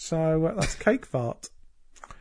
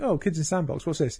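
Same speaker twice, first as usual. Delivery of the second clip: plain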